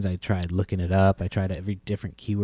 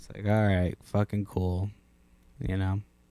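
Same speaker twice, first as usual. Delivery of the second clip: normal talking voice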